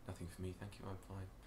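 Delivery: very quiet, soft, almost inaudible. Retelling the dad answering a waitress: imitating a very quiet voice. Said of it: "my dad is very quiet".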